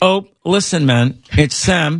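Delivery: unhurried, slow, high, deliberate celebrity-style voice. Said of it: "If you know what [name] sounded like".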